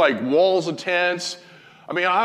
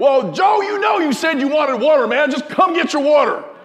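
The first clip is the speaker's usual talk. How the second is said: very high-pitched hollering, acted out, raised shouting; 9 semitones higher, 5 dB louder than usual. Retelling a shouting match about water, imitating someone shouting back. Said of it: "Everybody's shouting at everybody".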